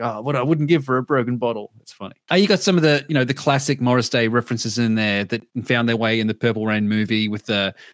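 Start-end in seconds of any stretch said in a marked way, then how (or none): 0.0-1.7 wry, grumbling aside, mumbled quietly. Retelling a waiter's line from the skit: imitating a mumble under breath. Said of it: "mumbles under his breath".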